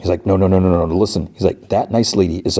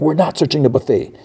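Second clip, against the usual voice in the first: put-on, high-pitched, angry shouted yell; 8 semitones higher than usual. Retelling a scene where a character answers the group: imitating someone yelling. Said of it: "And so then he's yelling".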